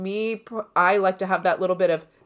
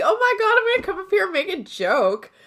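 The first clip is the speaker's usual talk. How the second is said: put-on, very high, sing-song cutesy girl voice; 12 semitones higher than usual. Retelling how she opens on stage, imitating her own cutesy stage manner. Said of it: "I do the cutesy".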